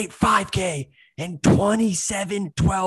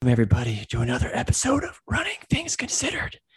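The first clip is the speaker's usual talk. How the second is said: hushed whisper, very soft, barely above breath; 8 semitones lower, 4 dB quieter than usual. Host opening the episode while the guest just woke from a nap, whispering. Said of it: "why I'm whispering right now".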